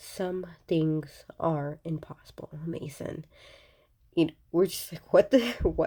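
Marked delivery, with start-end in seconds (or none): none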